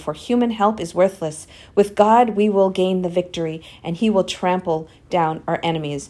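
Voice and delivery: ordinary talk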